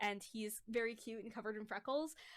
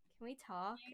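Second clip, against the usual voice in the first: acted, heartbroken, dejected, very sad, sorrowful voice. Retelling how another player started a breakup talk: imitating a very sad voice. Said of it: "'cause it was the saddest voice".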